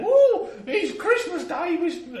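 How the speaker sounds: very high, slow, loud, eager urchin voice. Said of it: "I'm gonna stop doing that".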